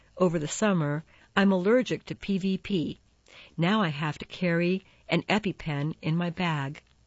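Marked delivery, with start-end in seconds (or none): none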